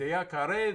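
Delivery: Spanish-accented speech.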